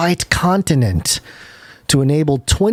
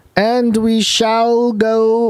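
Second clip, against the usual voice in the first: stately regal voice, high, very slow and drawn out; 6 semitones higher than usual. Starting the segment, not sure why: talking like royalty. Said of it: "Everything's like the royalty thing".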